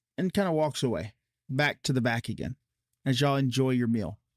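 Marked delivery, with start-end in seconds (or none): none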